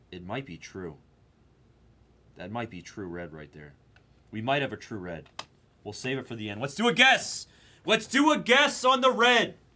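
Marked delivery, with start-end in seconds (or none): 6.6-9.4 very high, rising, thrilled excited shout. Streaming a game, the player calls a guess, excited shouting. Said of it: "Sorry for shouting, but I'm excited".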